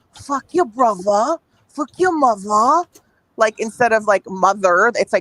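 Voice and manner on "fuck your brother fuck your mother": put-on London Cockney accent. Showing another speaker how the Cockney accent sounds: put-on Cockney accent. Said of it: "the Cockney accent, which is, like, you know, when you say things like".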